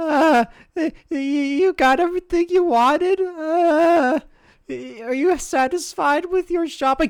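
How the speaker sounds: very high, very loud, jittery, stammering gnome voice. Game master voicing the gnome cashier greeting two players: nervous stammering gnome shopkeeper. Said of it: "and you see at the front there's like what looks to be a very nervous looking little gnome who's just like, / like the gnome is like a very nervous wreck. / He's just he's just doing these noises. / l".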